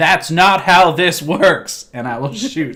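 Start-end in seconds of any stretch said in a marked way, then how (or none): 0.0-1.9 loud, forceful yelling. In a tabletop game, a player's character shoots and yells at the target: yelling. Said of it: "I will yell at him".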